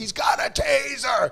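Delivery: raspy, very high scream at full volume. Retelling a struggle with a man holding a taser; retelling a scream at full volume. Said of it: "I'm screaming at the top of my lungs".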